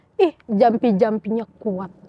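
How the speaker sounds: put-on very high, crone-like old woman voice. Retelling a ghost story, quoting a voice heard from afar: imitating an old woman's voice. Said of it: "ada suara nenek-nenek ngomong gini".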